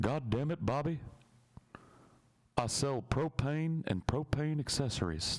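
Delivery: slow, deliberate, drawn-out, high-pitched put-on voice. Answering a request for a best impression: Hank Hill voice. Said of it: "All I can do as Hank Hill is".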